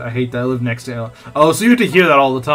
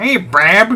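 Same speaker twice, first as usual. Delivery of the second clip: goofy put-on Chicago accent, pitched up; 8 semitones higher, 4 dB louder than usual. Showing how people from chicago talk, in a chicago accent impression. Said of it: "my impersonation of people from from Chicago".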